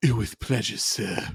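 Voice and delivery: acted, polite tone turned sinister and evil-sounding. Retelling how an officer delivers a line about violence: imitating Reed's sinister line. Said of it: "his lines when it comes to violence gets very sinister".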